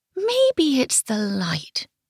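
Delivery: high, soft, musing murmur under the breath. A painter studies her canvas and talks to herself: murmuring to herself. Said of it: "she murmured to herself".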